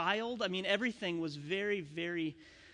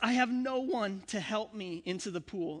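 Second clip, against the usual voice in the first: put-on slow, whiny, complaining, kid-like whining tone; 3 semitones higher than usual. Reading the man's complaint from a passage, in a whiny complaining voice. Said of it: "you gotta imagine like the whiniest voice possible".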